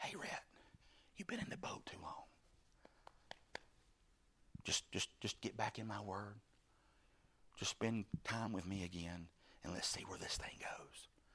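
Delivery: hushed whisper. Voicing a whispered message from God to a listener, whispering. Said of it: "God is whispering that to somebody".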